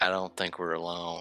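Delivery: very low tone. In the game, the character speaks to Brant after nudging him: very low tone. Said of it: "in a very low tone".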